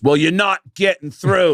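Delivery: put-on clichéd, hackneyed, very high-pitched Australian accent. Retelling what the man in the crowd said again: hackneyed Australian accent. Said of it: "It was Australian and kind of hackneyed".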